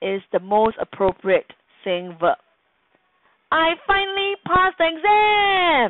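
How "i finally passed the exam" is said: very high, thrilled exclaim, "exam" stretched out. Reading an example sentence in a video lesson on saying verbs, exclaiming. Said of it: "Rajan exclaimed".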